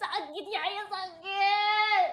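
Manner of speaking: slow, drawn-out, sobbing cry of pain.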